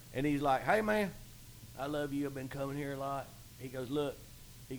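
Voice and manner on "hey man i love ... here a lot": easygoing, friendly country ranch-hand drawl. Retelling meeting a country man at the bar, the speaker imitates Peanut's voice. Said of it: "talking like this".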